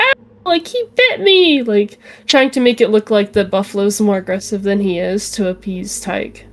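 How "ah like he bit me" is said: shrill, put-on, very high shriek. Voicing a character faking a scream about a bite: fake scream in character. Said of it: "fake a scream".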